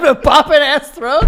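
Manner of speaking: high, loud, laughing disbelief.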